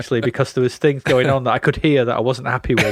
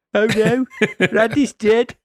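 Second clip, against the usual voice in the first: very high pitch, slow and drawn out; 9 semitones higher than usual. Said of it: "That's a pretty good [name] impression".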